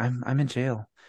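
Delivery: calm, even, unraised voice. Imitating a friend calling from jail: not raising his voice. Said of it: "Bubble Wheat does not raise his voice".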